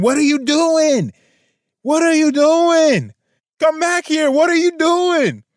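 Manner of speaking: very high-pitched screaming, acted out. Retelling what a younger woman behind her was screaming.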